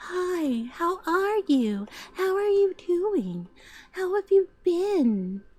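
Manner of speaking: very soft-spoken, slow, breathy voice. Imitating how a woman now greets people: soft-spoken breathy voice. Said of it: "She talks like this and she's very soft spoken".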